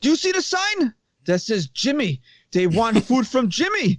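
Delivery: put-on Egyptian accent. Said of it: "Pretty good Egyptian accent".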